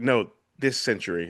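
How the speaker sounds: ordinary talk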